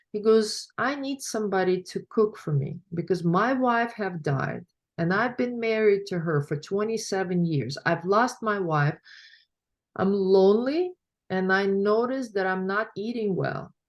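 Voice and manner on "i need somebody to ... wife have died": ordinary talk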